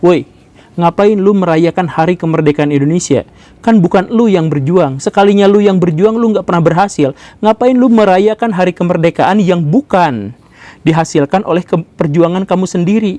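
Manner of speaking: ordinary delivery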